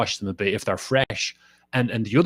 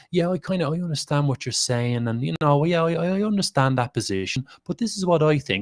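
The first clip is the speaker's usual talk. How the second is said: nice, put-on pally tone, pitched up and friendly; 5 semitones higher than usual. Speaker imitating a man who comes in with a nicer tone. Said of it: "He comes in with a nicer tone".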